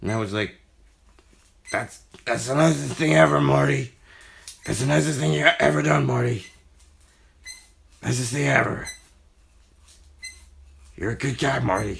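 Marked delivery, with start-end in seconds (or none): 1.7-12.0 high, creaky cartoon voice. Retelling own reply to a fan's gift in a Rick impersonation. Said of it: "my, uh, Rick impersonation from Rick and Morty".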